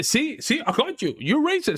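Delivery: high, mocking put-on impression voice. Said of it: "Piers Morgan still stuck in".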